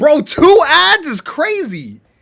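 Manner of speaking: booming, drawn-out, shrill, very loud high-pitched holler. Complaining about two ads playing before the video: yelling. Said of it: "Let me stop yelling".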